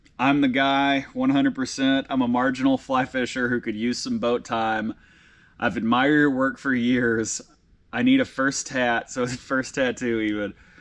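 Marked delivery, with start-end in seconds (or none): none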